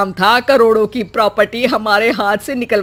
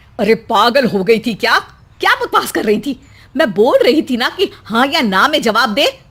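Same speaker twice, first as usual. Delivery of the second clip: scolding voice. Voicing the mother-in-law scolding the bride: mother-in-law scolding. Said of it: "तब कोयल की सास कहती है".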